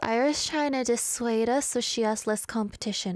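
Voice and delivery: ordinary talk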